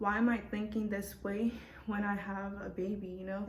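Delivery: ordinary talk, nothing marked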